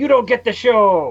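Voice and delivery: put-on Cuban accent. Quoting a recurring sound clip played on the show, in a thick cuban accent. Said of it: "in his thick Cuban accent saying".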